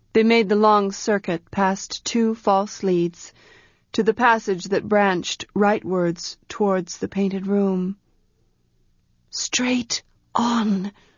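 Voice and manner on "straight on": soft, hushed whisper. She guides someone through the dark passages, whispering. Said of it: "she whispered".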